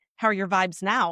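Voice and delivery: dry, teasing, snarky little jab. Retelling what he asked last night: imitating a snarky remark. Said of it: "he kinda said a little snarky".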